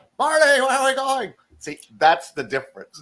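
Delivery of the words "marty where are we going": very high-pitched put-on voice. Showing the difference between character voices, high-pitched Marty voice. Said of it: "And then the high pitch Marty".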